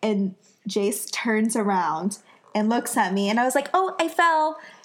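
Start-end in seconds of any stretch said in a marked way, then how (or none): 3.7-4.5 high, breezy, utterly casual nonchalant tone. Retelling what was said right after a fall: imitating a nonchalant tone. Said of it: "Just so nonchalantly".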